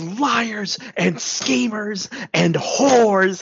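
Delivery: furious, high, drawn-out angry ranting shout. Describing a collision, the speaker quotes what he shouts, retelling a shout. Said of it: "he shouts".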